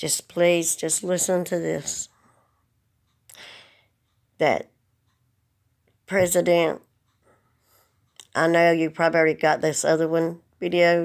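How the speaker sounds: voice fighting back tears. Speaking to the president in a video, holding back tears. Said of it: "'Cause I'm trying not to cry again".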